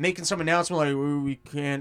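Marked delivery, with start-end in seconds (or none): 0.9-1.8 put-on grumbly senator voice, lower in pitch. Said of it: "he's all grumbly".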